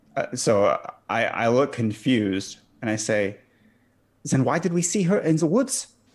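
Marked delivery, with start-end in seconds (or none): 4.3-5.9 fake German accent, pitched up. Player voicing his confused soldier character questioning the others, in a put-on German accent. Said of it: "Because you put on that accent".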